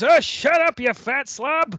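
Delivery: high, screaming yell. Retelling the wrestler screaming at someone in the crowd: imitating Larry screaming. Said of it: "Larry screams".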